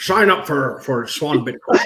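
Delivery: slow, weird, drawled pirate-ish voice. Trying a Sean Connery impression for a sponsor line: failed Sean Connery impression. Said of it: "Sounds like a pirate, though. That's not even Sean".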